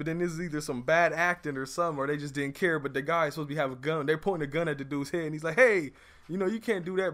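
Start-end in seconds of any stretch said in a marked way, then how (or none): 5.6-7.1 play-acted laughing, chuckling through the words. Imitating an actor held at gunpoint: imitating someone laughing while talking. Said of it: "he's just fucking cheesing".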